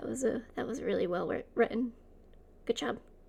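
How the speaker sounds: discreet, soft, subtle half-whisper. Voicing Noah praising a classmate's writing during class: subtle half-whisper. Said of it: "kind of whispers very subtly".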